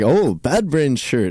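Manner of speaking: put-on very thick, slow, strong Italian accent. Quoting his italian professor remarking on his shirt, in a strong italian accent. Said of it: "in his very strong Italian accent".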